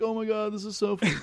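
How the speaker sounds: high, fake, put-on teary crying voice. Retelling how he pretended to cry while opening a gift, imitating fake crying. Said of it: "he's acting like he's crying".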